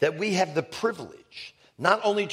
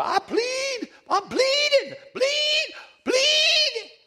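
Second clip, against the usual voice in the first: put-on goat-like bleating voice, much higher, slower, louder; 3 dB louder than usual. Recalling a woman during a deliverance session, goat-like bleating voice. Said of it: "It sounded like a goat".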